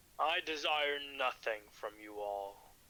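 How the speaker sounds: deep, low, raspy creature voice with an edge. Running a game, the speaker voices the Gamoa answering the group: deep raspy voice. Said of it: "He will have a very deep-like voice with a raspy edge to it".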